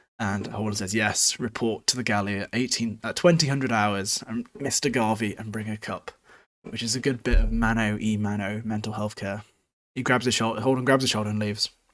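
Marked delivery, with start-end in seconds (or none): none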